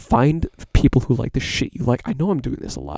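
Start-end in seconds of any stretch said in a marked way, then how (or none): 0.0-2.0 crisp close-mic enunciation, lower and louder. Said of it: "I'm enunciating my words, especially my P's".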